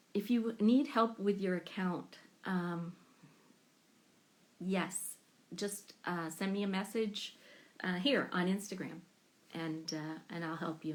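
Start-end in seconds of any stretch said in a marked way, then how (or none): none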